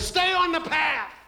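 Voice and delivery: put-on old grandpa voice. Speaking to graduates about a fairy-tale lesson, in a grandpa voice. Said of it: "let me say it in grandpa's voice".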